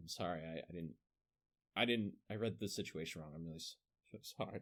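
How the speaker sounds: acted halting, awkward, stumbling delivery. Retelling how an NPC apologized to a player: imitating an awkward apology. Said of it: "I had the N P C just kinda awkwardly be like".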